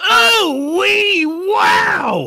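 very high, very loud, shrill yell with oh stretched. Opening an improv scene about a bad smell: yelling. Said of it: "Why are you yelling?".

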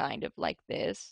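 creaky, crackly vocal fry with a rough growl. Demonstrating to listeners what vocal fry sounds like. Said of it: "that's called vocal fry".

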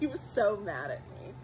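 soft giggling laughter running through the line. Recalling a favorite memory of Daniel being upset, giggling.

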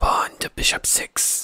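slow, drawn-out, hushed whisper. Reading game text aloud, a mysterious voice speaks: whispering voice. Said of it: "a voice whispers".

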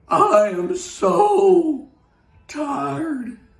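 put-on weary, worn-out old engine voice, sighing. Narrator reading a children's story, voicing the rusty old engine: tired sighing old engine. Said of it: "rusty old engine stopped".

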